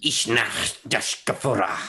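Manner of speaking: rasping, somewhat high-pitched voice. Game master voicing a face whose eyes light up when prodded, raspy high-pitched voice. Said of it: "a raspy, kind of high-pitched voice see, says".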